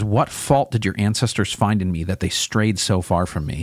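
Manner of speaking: usual speaking voice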